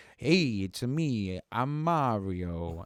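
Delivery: very slow, in a plain natural voice. Recalling a favorite clip: imitating Chris Pratt as Mario. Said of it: "the clip of Chris Pratt being like".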